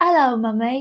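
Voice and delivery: staunch, strong put-on Southern English accent. Mother imitating her little son's greeting, in a staunch Southern English accent. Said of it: "he speaks with like a staunch English, Southern English accent".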